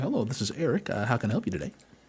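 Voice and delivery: put-on customer service phone voice. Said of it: "And then he gets a phone call".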